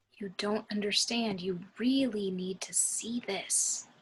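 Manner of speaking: hushed voice. Leaning in toward the man who is driving, she speaks in a lowered voice. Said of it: "she leans in and lowers her voice".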